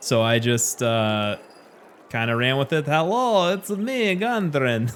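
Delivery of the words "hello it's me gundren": put-on Eastern European accent, pitched up. Showing the voice they used for a character, Gundren in Eastern European accent. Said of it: "it just turned into total Eastern European".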